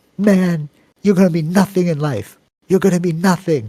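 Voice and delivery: poor put-on Jamaican accent, pitched high. Retelling what a physics teacher told a late student, bad jamaican accent. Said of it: "That was a bad Jamaican accent".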